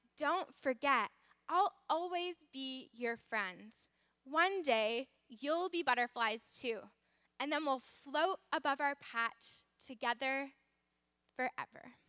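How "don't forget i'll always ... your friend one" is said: usual speaking voice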